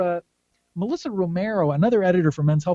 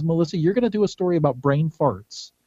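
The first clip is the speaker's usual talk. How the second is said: ordinary talk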